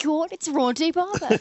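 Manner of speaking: put-on high, loud German-accented yelling. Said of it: "Breaking out the accent here".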